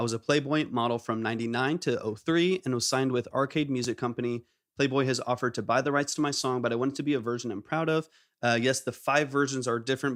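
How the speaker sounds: ordinary delivery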